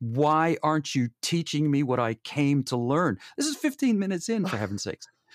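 play-acted hysterical crying and ranting, high screaming. Retelling how a woman at a training screamed at them, imitating a screaming, crying woman. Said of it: "she was crying, hysterical, screaming at me, going".

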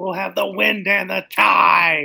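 very loud, raw, rough yell, word "tide" drawn out. Voicing a character cackling at the helm, character yelling at the helm. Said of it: "yelling out".

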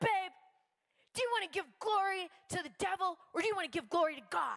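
hard-edged, tactless, harsh, blunt delivery. Retelling how the husband corrected her, imitating a harsh remark. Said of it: "He said it really harsh".

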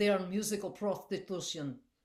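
put-on Georgian accent. Retelling what Misha said at the bar, imitating Misha's Georgian accent. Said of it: "I'm probably butchering his accent".

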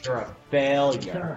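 teasing with laughter. Game master mocks a player after a failed roll: mocking, laughing.

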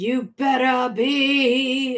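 eerie, echoey voice, "be" drawn out. Retelling a scene where a man speaks to Kirk's turned back, echoey voice. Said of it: "and it's all echoey".

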